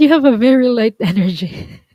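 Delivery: chuckling while speaking. Telling a listener their energy feels very light, laughing while talking. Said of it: "I'm not laughing at you".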